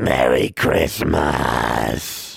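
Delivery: hoarse, rough, creaky raven-like croak. A bird calls a greeting before flapping out the window into the night; croaked. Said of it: "Hagar croaked".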